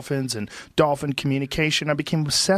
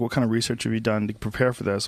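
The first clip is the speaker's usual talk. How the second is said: ordinary delivery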